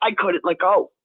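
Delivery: ordinary talk, nothing marked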